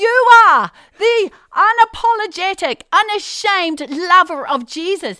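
very loud, high, drawn-out, emphatic yell. Retelling telling a man on a boat about jesus: imitating own past yelling.

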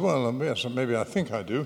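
ordinary talk

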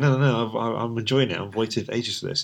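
ordinary talk

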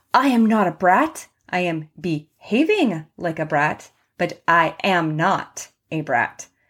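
normal talking voice

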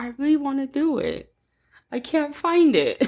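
mournful, dejected, sad, high-pitched voice. Retelling what she said after searching all day for it: imitating her sad voice. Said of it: "she was all sad".

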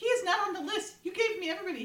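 high-pitched indignant protest.

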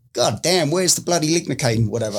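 put-on bad Australian accent. Retelling what doctors said over the intercom, bad Australian accent. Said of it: "that's a really bad accent".

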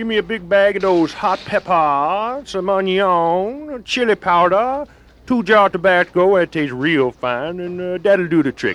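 put-on high Cajun accent, drawn-out "onion". Acting the Cajun cook placing an order at the store, Cajun accent. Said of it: "the Cajun cook".

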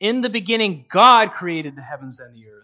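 stress on "god".

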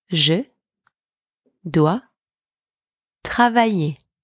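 each word said alone, long pause after each. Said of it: "Please repeat after me".

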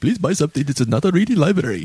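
put-on Indian shopkeeper accent. Claiming it's his Irish accent, the speaker plays a shopkeeper in an Apu-ish accent. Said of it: "It sounds very Apu-ish".

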